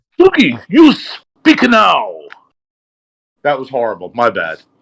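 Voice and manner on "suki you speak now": very high, very slow, swooping kung fu dub voice. Greeting someone, then handing the turn to another person: kung fu movie dub voice. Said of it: "that was my kung fu overlay voice".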